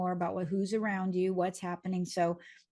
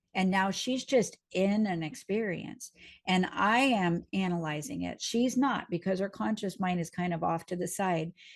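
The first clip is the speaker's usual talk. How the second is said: ordinary delivery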